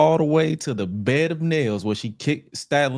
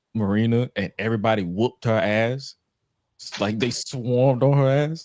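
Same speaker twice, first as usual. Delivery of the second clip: normal talking voice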